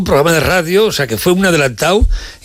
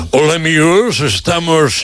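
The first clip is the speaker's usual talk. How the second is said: affected, put-on, placed radio announcer voice. Mocking how some famous radio announcers place their voice: affected radio announcer voice. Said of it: "cómo coloca la voz".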